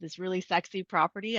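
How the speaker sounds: ordinary delivery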